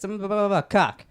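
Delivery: loud yell. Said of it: "I just said it like this".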